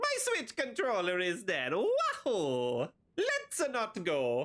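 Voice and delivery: swooping, sing-song character voice with wide pitch swings. Reading a viewer's message aloud in the Mario voice. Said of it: "I did read that in the Mario voice".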